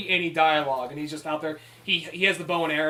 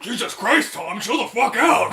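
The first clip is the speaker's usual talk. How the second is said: belted out, high-pitched and loud; 6 semitones higher, 6 dB louder than usual. Joking about a duet, voicing the puppet's reply: Cookie Monster voice. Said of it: "Cookie Monster's like".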